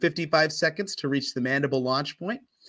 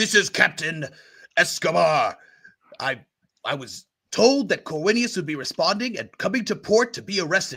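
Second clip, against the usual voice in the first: even more enraged, higher, furious, raised voice. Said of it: "Now even more enraged".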